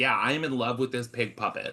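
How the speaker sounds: normal talking voice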